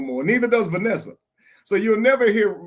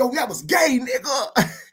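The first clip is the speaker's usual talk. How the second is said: put-on aggressive voice, pitched higher; 5 semitones higher than usual. Imitating how Callie would react to someone screaming: imitating Callie, aggressive. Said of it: "He's so aggressive".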